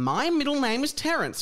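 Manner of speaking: put-on devilish Irish accent. Quoting Seamus Finnegan in the staff room: Seamus Finnegan devilish Irish accent. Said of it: "in that devilish Irish accent of his".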